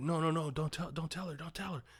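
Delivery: mock frantic, high, panicked stammering, repeating words. Retelling a film scene, imitating Billy panicking. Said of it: "He starts having a panic attack".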